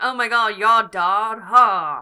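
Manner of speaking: snotty drawl, loud, slow and drawn out. Imitating how Wally talked in the episode: imitating Wally's snotty talk. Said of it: "really snotty".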